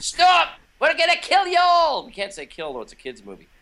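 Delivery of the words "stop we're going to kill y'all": very high, slow, cackling villain voice. Demonstrating a kids-movie villain's voice to the others, cackly villain voice. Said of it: "He's kind of hay and cackly like that".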